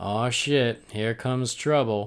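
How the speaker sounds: mock nonchalant, totally unbothered flat monotone. Retelling a character's line from the film: imitating deadpan delivery. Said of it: "it's funnier with no inflection".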